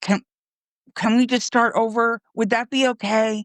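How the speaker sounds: mock desperate, frantic, high-pitched begging. Retelling what a man said to the speaker on the phone, imitating frantic begging. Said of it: "begging me".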